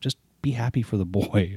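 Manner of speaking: play-acted irritated, fed-up, scolding tone. Retelling what his wife says when he dislikes Easter: imitating an angry wife. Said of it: "my wife gets so pissed off".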